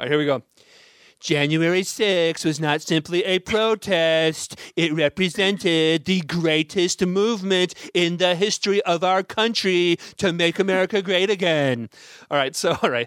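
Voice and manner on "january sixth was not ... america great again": every phrase drawn out slowly. Reading a quote from a post in a bad Donald Trump impression. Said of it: "I'm gonna do my bad Donald Trump impression".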